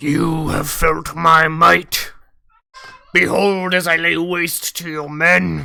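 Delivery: very slow, dragged-out, sneering dragon voice. Voicing a dragon that sneers at the party after combat: sneering dragon voice. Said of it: "sneers at him and looks at Fenrir and goes".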